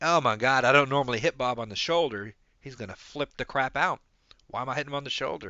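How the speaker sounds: usual speaking voice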